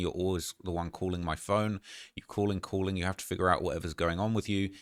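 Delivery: ordinary talk, nothing marked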